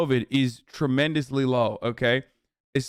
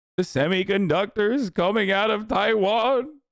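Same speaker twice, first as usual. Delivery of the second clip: play-acted weepy, high, tearful crying voice; 7 semitones higher than usual. Mocking a speaker who seems to cry over Taiwan: imitating someone crying. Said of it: "He's like".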